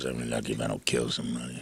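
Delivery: mimicked under-breath mutter. Recounting what an unhappy pilot said next, imitating muttering under breath. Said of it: "And then under his breath".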